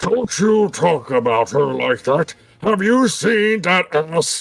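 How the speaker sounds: growled monster voice. Voicing a big orc who growls at the players: growling orc voice. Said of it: "big orcs kinda growls at you".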